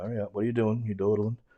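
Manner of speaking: ordinary talk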